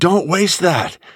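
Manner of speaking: high-pitched, slow, drawn-out yell. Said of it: "she yells at the T V".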